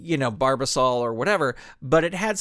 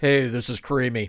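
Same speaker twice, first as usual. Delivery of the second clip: really deep, hammed put-on character voice; 4 semitones lower than usual. After finally recalling the guy's name, doing a Patrick Warburton voice. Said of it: "he had just had this really deep voice".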